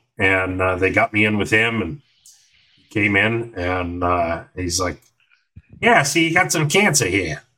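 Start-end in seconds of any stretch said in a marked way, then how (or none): 5.8-7.4 put-on horrible New York accent, fast, swooping, rattled off. Retelling what the doctor told him at the hospital, in a horrible new york accent. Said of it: "my New York accent is horrible".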